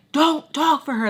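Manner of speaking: acted sharp officer yell, loud, high-pitched. Retelling how an officer spoke to a relative: retelling a yell. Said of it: "like, yelling at her".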